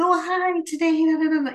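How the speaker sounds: high voice. Showing how her voice does not sound: higher register than her normal voice. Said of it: "that my voice isn't like".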